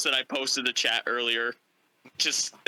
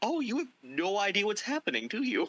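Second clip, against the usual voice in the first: put-on fatherly, pitying tone; 7 semitones higher, 4 dB quieter than usual. Retelling a scene, the speaker acts out Gilder's line with mock fatherly pity. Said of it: "the pity of, like, a father realizing his son is an idiot".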